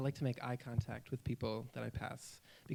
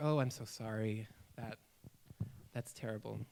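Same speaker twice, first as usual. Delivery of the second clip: put-on sorry tone, lower and quieter; 4 semitones lower, 5 dB quieter than usual. Retelling how mother reacts when told it's not wanted: imitating mother feeling bad. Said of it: "she just feels so bad".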